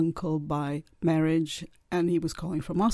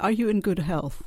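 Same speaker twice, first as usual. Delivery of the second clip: put-on, thick, heavy Russian accent; 3 semitones higher than usual. Retelling a strange phone call from a caller: imitating a thick Russian accent. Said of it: "a man with a thick Russian accent".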